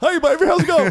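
broad, exaggerated Southern accent, pitched very high. Comedian showing that all his Southern impressions sound alike: Ron DeSantis impression. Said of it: "It's always the same".

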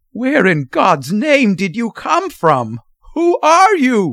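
frantic, panicked outburst, high and rising pitch. Narrator reading a man's reply to an old man; frantic outburst. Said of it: "burst out Mr. Button frantically".

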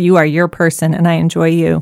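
ordinary talk

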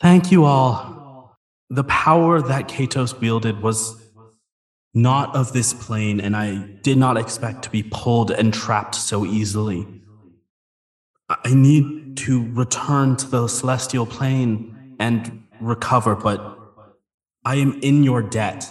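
gentle-toned giant creature voice. Game master voices the Leviathan addressing the group, in gentle tones. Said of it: "in gentle tones".

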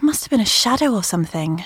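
plain reading voice

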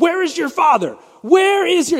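shrill, high-pitched, very loud yell. Retelling a friend yelling out a car window at a kid: imitating someone yelling. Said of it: "he starts yelling out the window".

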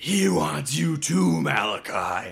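very slow possessed voice, each word drawn out. Retelling a movie scene, voicing possessed Isaac: deep possessed voice as Isaac. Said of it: "got this real deep voice coming out of him".

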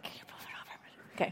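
soft, barely voiced whisper. Retelling telling him what to do: imitating own whisper. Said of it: "I was whispering, like".

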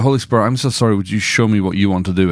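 normal talking voice

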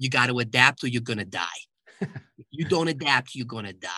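put-on heavy, laid-on New York accent. Recalling a man's advice about doing business: thick new york accent. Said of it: "he had this thick New York accent".

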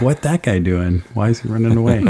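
ordinary talk, nothing marked

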